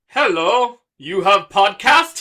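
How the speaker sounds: loud put-on Indian accent. Retelling messages from a promoter: imitating an Indian promoter. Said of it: "an Indian promoter who's just like".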